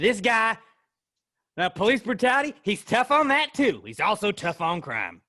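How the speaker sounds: loud, put-on Southern accent. Riffing on a candidate's tough-on-crime pitch, southern campaign manager accent. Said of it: "I don't know why I'm talking like this".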